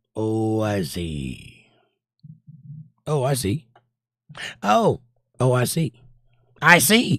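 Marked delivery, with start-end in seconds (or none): 0.2-1.7 slow, drawn-out, deliberate, low and soft delivery. Host reading a live chat comment aloud, said slowly. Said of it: "Say it slow".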